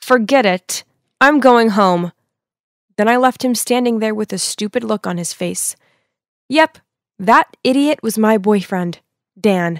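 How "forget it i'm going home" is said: play-acted, forced through clenched, gritted teeth. Retelling telling a boyfriend off: retelling words said through gritted teeth. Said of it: "through gritted teeth".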